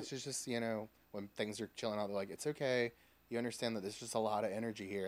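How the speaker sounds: plain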